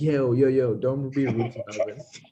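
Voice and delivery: slow, unhurried, drawn-out voice. Retelling what Devin said about the bonus marks: imitating Devin. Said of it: "That's why he's like".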